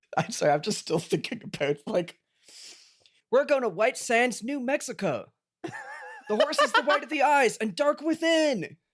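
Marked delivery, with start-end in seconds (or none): 3.3-8.6 put-on voice, pushed way up very high. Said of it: "Mister Beast voice".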